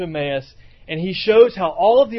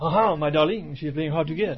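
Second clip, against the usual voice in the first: exaggerated, cartoon-style French accent; 3 semitones lower, 4 dB quieter than usual. Explaining how a cartoon character speaks English, Pepe Le Pew French accent. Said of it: "He just says all the English words with a French accent".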